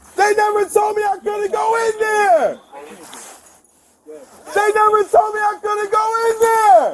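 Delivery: screaming, yelling, shouting. A man barred from a store for panhandling repeats his protest, screaming. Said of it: "you just can't scream the whole time".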